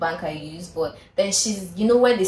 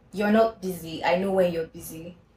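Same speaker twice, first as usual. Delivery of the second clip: play-acted firm, stern, serious no-joke tone. Retelling a caller's reply after being told she was busy: imitating a stern voice. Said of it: "His voice was quite stern".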